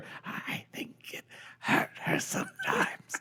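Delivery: hushed whisper. Reading a story aloud as a character's voice drops: whisper. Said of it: "Not that quiet of a whisper".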